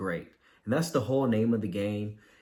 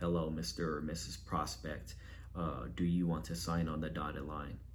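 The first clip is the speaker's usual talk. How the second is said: low, flat, unchanging monotone drone; 5 semitones lower, 10 dB quieter than usual. Showing how he used to talk to a prospect, flat monotone. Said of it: "I sounded too monotone. I wasn't uh, my tone never changed. I kind of just talk like this".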